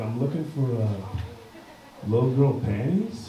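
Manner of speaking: whispering. Retelling what he whispered to a lady who asked to help him, whispered. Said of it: "so I whispered it".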